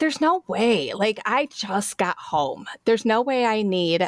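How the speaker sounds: normal talking voice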